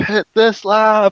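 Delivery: very high, top-of-lungs screamed yell. Retelling how Colton screamed at him with dead headsets: imitating Colton screaming. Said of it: "screaming at the top of his lungs".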